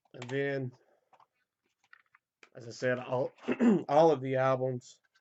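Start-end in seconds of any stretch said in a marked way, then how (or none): 3.9-5.0 louder, voice cracking and coming apart. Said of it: "My voice is coming apart".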